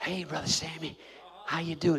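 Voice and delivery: very hushed, very quiet solemn tone. Imitating mourners greeting someone at a funeral home: imitating a hushed funeral voice. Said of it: "that's the tone of".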